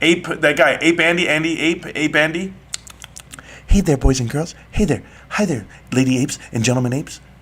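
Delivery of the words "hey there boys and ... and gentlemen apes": put-on whisper, lower pitch, faster pace. Mocking a guy who whispers all the time, Ape Andy whisper impression. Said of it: "who's the other guy who whispers all the time?".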